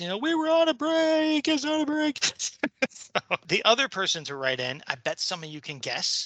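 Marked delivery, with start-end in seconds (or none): 0.2-2.2 high, loud, whiny impression voice. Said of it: "Ross from Friends".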